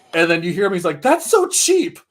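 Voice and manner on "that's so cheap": put-on whiny little-kid voice, pitched very high. Retelling an anime character complaining during a fight: imitating a childish whine. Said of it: "like, a child".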